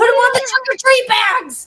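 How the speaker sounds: high, loud, way too excited shout.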